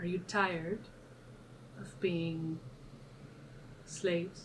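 very quiet, hushed, kept-down murmur. Speaking to two slaves so no one outside the building hears: quiet voice. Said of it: "in a quiet voice".

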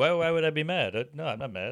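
put-on Italian accent throughout. Retelling what the guy giving a haircut said: imitating an Italian accent. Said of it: "He's like this Italian guy".

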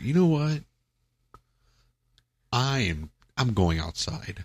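put-on upset tone. Speaker recalling being called a rat and walking outside, acting out being upset. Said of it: "and I was like really upset".

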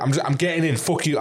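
mock aggressive, rude tone. Joking about how not to behave; imitates someone shoving in rudely; imitating an aggressive barge-in. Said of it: "I'd be like".

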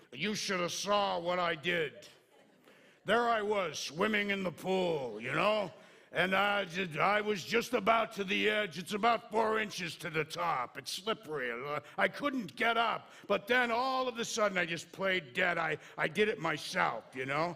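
loud, chatty talking-bug voice. Imagining a rescued bug telling the other bugs: talking bug voice. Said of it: "Can you imagine that bug talking to the other bugs?".

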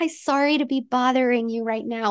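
apologetic salesperson voice. Retelling own past sales calls: imitating an apologetic salesperson. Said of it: "an apologetic salesperson".

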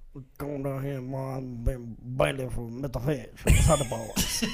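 heavy Creole accent, low voice, barely understandable. Trying out a bailiff's voice after being asked for more Creole, thick put-on Creole accent. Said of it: "Can you do more Creole?".

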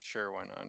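very soft, very quiet, sad and glum. Agreeing to go first with the movie review, sounding sad. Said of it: "Don't sound so sad about it".

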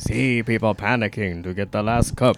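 put-on spooky horror narrator voice. Rereading a line from the coffee bag on request: Vincent Price voice. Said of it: "Vincent Price's voice".

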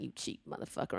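mock mutter under breath. Talking about acquaintances, acting out what he says under his breath: retelling a muttered aside. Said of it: "under my breath".

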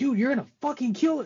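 put-on, very high, rushed, fast yell. Recalling watching it in bed last night and yelling at Paul, retelling a yell. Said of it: "But I'm yelling at Paul".

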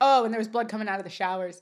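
ordinary delivery

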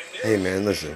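hushed, polite, well-meaning half-whisper. Retelling a woman politely warning a man: imitating a half-whisper. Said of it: "she even whispered it to him".

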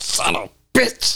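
slow, breathed-out whisper. Retelling a film ending where the character hits the villain: Murtaugh saying son of a bitch. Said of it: "it's like a new tone".

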